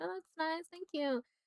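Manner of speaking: mock polite, unimpressed tone. Retelling a movie character's reaction to a necklace gift: imitating unenthusiastic thanks. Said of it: "not really into it".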